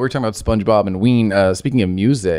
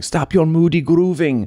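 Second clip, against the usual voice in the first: put-on, higher-pitched, German-accented fish voice; 7 semitones higher than usual. Retelling a cartoon scene, quoting the Werner Herzog fish: imitating the Werner Herzog fish. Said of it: "Werner Herzog fish spraying down another fish going".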